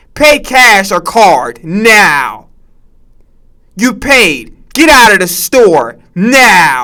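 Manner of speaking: slow, stretched, curt, rude automated machine voice. Imitating the CVS automated checkout voice: imitating a rude automated checkout voice. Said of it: "They be rude as hell".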